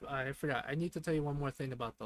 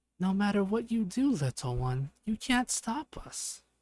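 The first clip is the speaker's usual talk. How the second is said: very creepy, eerie, slow, pitched-up taunting voice; 6 semitones higher, 5 dB louder than usual. Narrator voices an unseen voice behind the listener, in a very creepy voice. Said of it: "in a very creepy voice saying".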